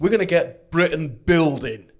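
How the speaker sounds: put-on northern English accent. Discussing government spending plans, quoting the slogan in a mocking northern accent. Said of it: "I'm speaking with a northern accent".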